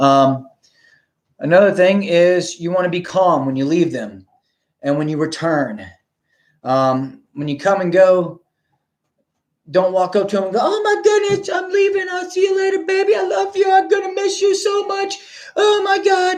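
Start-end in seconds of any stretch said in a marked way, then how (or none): 10.6-16.4 very high, over-excited, gushing voice. Speaker demonstrates how not to say goodbye when leaving them, high-pitched excited voice. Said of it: "you're using your high pitched, exciting voice".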